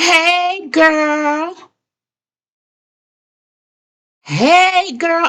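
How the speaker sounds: play-acted very high, loud holler. Retelling suddenly hearing someone call out while following Martha to the door, loud voice. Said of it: "in a loud voice".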